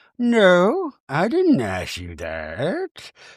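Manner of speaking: very calm, slow, even delivery. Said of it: "very calmly".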